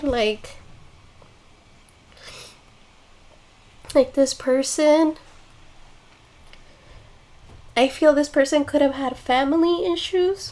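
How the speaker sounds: choked up, tearful, voice breaking, near crying. Reacting to a person's story and apologizing to viewers, crying while speaking. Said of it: "Oh my god, I'm crying".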